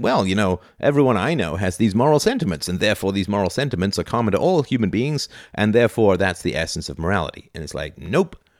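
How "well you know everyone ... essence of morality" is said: ordinary talk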